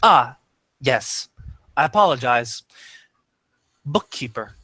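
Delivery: flickering, mechanical, machine-like voice. A narrator voicing a voice from beneath, in a mechanical voice. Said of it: "mechanical voice from from beneath".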